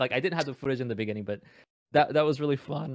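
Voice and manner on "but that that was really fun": voice breaking, cracking mid-line. Recounting a funny game round, voice cracking. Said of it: "voice crack".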